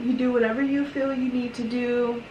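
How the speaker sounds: normal talking voice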